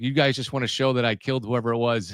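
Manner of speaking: ordinary talk, nothing marked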